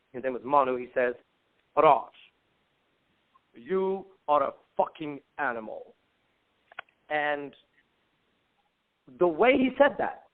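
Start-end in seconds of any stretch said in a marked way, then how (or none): 1.7-5.9 deep, low, slow, weighty delivery. Retelling what Manu said to him right before leaving, in Manu's deep voice. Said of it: "he has a deep voice".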